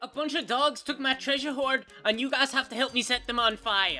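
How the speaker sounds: poor put-on Scottish accent. Voicing a character speaking to the group, in a really terrible Scottish accent. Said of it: "It's just a really terrible Scottish accent".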